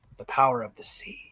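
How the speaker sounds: hushed, grave, dead-serious whisper. Imitating a film character's line after hearing it described: imitating a serious line delivery. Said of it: "just says that line, just serious".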